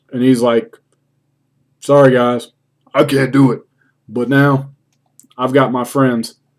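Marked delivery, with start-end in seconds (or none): 1.8-6.4 glum, solemn, sorry little voice. Retelling a wrestling segment, imitating John Cena's somber tone. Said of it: "his little somber tone voice".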